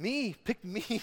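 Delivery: put-on very high, loud, eager little-kid excitement. Speaker retells Isaiah volunteering to be sent, acting out kid-like excitement. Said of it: "like a little kid on Christmas".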